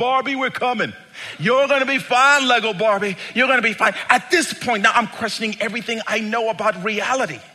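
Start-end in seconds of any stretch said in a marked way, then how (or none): 0.0-3.9 play-acted, urgent, reassuring yelled delivery. Retelling a crew chief charging into the house: imitating someone screaming.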